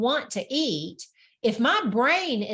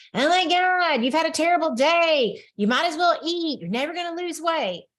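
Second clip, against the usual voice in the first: frantic, manic, shrill, high voice; 6 semitones higher, 3 dB louder than usual. Voicing the inner voice that urges you to overeat, maniac shrill voice. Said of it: "this like maniac shrill that goes off".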